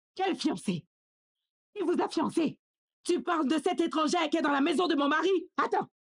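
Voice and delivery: furious, heated, demanding angry voice. In a drama, a mother reacts to her son's mention of a fiancée: shouting angrily. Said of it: "Pourquoi tu cries comme ça?".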